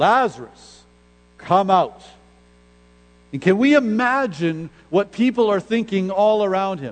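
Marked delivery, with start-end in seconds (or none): 0.0-2.0 loud, commanding call with full authority. Retelling how Jesus called to Lazarus before witnesses, in Jesus's loud commanding voice. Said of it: "Jesus speaks with this loud voice".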